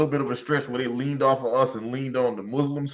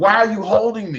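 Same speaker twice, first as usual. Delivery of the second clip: raised, high, showy mock accusing tone; 7 semitones higher, 5 dB louder than usual. Imitating a woman who performs for the camera: imitating her performative accusation. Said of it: "so she'll say stuff like".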